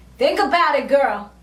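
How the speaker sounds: ordinary talk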